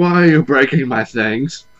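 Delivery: put-on loud, whiny baby voice. Retelling a cartoon scene, imitating Peridot whining: whiny Peridot voice. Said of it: "Peridot is a whiny baby and just like".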